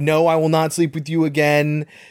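normal talking voice

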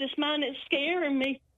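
ordinary talk, nothing marked

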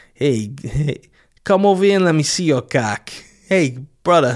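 put-on New York accent. Joking about how a New Yorker would say the word: New York accent. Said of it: "how a New Yorker says".

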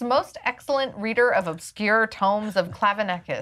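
normal talking voice

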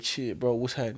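ordinary talk

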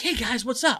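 put-on amped-up, high voice. Retelling a stranger greeting the group: imitating a hyper guy. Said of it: "this guy comes up to us, like, real, like, hyper".

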